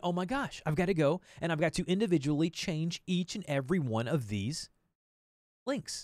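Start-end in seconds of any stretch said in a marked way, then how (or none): none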